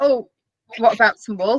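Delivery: ordinary delivery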